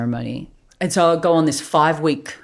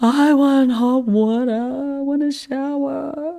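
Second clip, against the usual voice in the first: mock very high, drawn-out, tearful crying wail; 10 semitones higher than usual. Retelling being sick on hands and knees: retelling own crying. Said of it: "crying, going".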